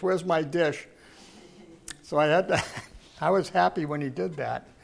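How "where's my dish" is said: put-on non-native broken English accent. Retelling how a man grabbed the speaker by the ankle: broken english. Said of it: "He said it in broken English".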